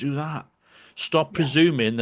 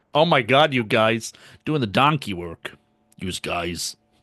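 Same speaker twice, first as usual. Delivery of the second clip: fake American accent, lower in pitch; 3 semitones lower than usual. Answering a request to say the phrase in American: put-on American accent. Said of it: "Say it in American".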